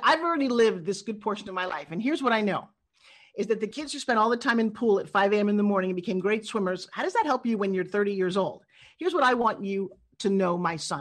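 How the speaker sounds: normal talking voice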